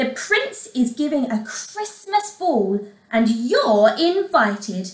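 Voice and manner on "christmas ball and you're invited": ordinary delivery, nothing marked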